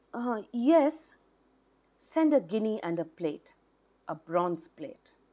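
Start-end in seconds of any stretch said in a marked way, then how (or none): 0.1-1.1 faltering, unsure, hesitant, pitched-up voice. A man answers his master's question about an invitation; answering hesitantly. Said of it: "Tara Prasanna answered hesitantly".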